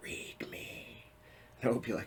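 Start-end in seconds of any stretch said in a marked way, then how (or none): 0.0-1.0 soft, eerie whisper, breathed like a secret. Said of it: "they will whisper to me".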